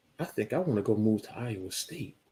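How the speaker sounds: whispered voice. Telling the other speaker about moving to iowa state, whispering. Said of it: "You are whispering".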